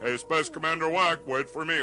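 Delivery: plain reading voice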